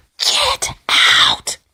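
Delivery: spooky, scary whisper. Acting out whispering into a partner's ear: whispering Amityville Horror voice. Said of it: "Whisper in his ear".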